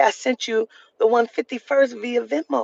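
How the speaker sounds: ordinary talk, nothing marked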